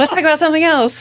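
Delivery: high, flustered voice with a gasp.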